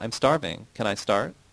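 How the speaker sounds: plain reading voice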